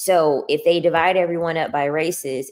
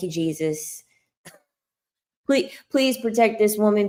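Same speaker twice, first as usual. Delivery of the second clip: sarcastic, fake earnest pleading tone; 5 semitones higher than usual. Pretending to pray about women who think they can change a man: sarcastic mock prayer. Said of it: "I'm being sarcastic, okay? I'm not really praying".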